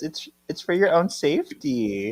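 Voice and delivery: even, unhurried put-on calm. Retelling a scene where Phoebe answers Ben, retelling a calm reply. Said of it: "Phoebe just calmly says".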